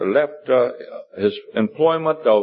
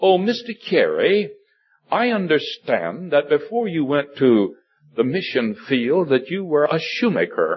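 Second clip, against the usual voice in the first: deliberately bad put-on British accent. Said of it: "I'm not too good with my British accent".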